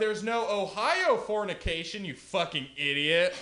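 high-pitched, exasperated, fed-up, pressing tone. Doing a guy convincing his friend to move to California. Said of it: "the guy trying to convince his friend".

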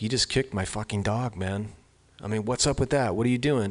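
put-on angry scolding voice. Retelling confronting a man in his face: retelling own angry confrontation. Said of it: "in his face".

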